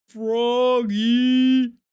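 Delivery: booming, stretched-out big cartoon cat voice. Giving a promised demonstration of voices, the speaker does a Big the Cat voice. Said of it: "channel my inner Big the Cat".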